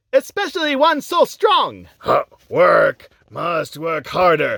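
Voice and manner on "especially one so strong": put-on sing-song Chinese accent. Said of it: "break out the stereotypical Chinese accent".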